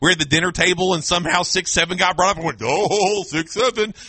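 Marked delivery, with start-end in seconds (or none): 2.6-4.1 mock playful, teasing, mocking delivery. A dad at the dinner table teasing his kids, mocking the 6-7 meme. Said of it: "Because I'm trying to mock them".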